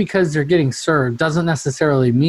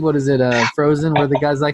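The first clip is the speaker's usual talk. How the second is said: ordinary delivery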